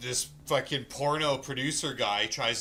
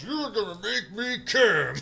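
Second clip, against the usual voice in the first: put-on grandpa voice, very high-pitched and loud; 9 semitones higher, 6 dB louder than usual. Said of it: "it's like Grandpa's voice".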